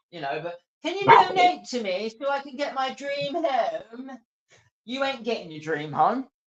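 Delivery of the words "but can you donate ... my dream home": put-on mocking voice, much higher, slower. A streamer mocks people who beg for donations on his channel: put-on mocking voice. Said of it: "I don't know why I'm doing that voice".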